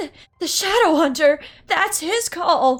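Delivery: frightened, scaredy cat character voice. Voicing a frightened character named Brian hearing a horn: scaredy cat voice. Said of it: "a bit of a scaredy cat voice".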